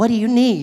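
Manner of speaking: automated phone assistant voice. Acting out asking the phone assistant for help: imitating Siri's voice. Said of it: "She's like".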